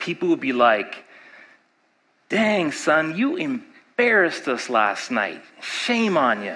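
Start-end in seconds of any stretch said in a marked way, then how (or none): 2.3-6.6 gossiping neighbor character voice.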